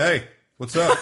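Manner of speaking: put-on careless big-kid voice, loud, high and entitled. Mocking big kids who trick-or-treat without costumes: imitating a big trick-or-treat kid. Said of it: "but like that's the voice".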